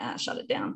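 low, dismissive whispered brush-off. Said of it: "That's the part that I'm like".

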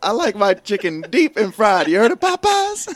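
very loud, high comic delivery, belted, swooping up and down. Quoting a movie scene about fried chicken: Chris Tucker impression. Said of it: "how Chris Tucker said Popeyes".

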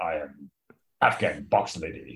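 very deep, slow, drawn-out disguised voice. Asking about changing voice like Batman does, then demonstrating in a deepened Batman voice. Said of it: "he just like deepens his voice, or like gargles something terrible".

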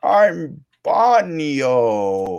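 loud, high put-on Italian accent, one word drawn out. Retelling Bane introducing himself to two little Italian boys, in Bane's put-on Italian accent. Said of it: "he's trying to like do it with the Italian accent".

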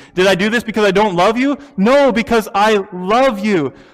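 mildly sarcastic, back-and-forth delivery. Retelling a letter writer defending his love: retelling in a sarcastic tone. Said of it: "he says it kind of sarcastically".

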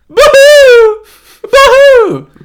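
put-on screaming "boo hoo". Retelling how he screams boo hoo instead of crying: retelling screamed boo hoo. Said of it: "he just screams "boo hoo".

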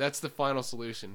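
plain

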